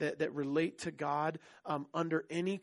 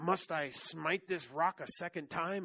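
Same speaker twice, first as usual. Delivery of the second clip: put-on grumpy voice, slower pace. Retelling the story, playing Moses answering the people: grunty, grumpy Moses voice. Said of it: "with a grunty voice and grumpy".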